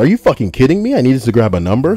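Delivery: acted-out, mild, played-small yelled outburst. Reading a retail story aloud, retelling a customer's scream: imitating a screaming customer. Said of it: "the lady just screams".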